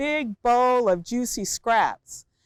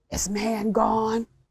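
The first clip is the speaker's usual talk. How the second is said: hissing alligator voice, words hissed out. Narrator reading a story, the alligator questions the dog: Monsieur Cocodrie hissing. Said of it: "the Alligator hissed".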